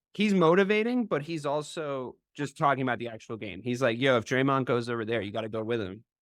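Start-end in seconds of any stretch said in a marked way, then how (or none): none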